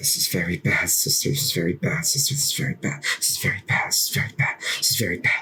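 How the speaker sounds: low, hushed whisper, words repeated. Leaning into you as you lead her away, she is whispering to herself. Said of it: "As you just hear her whisper".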